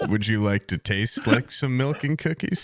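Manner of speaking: mock flirty voice. Retelling trying to flirt with a Santa phone: imitating own flirty line. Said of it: "I was trying to flirt with it".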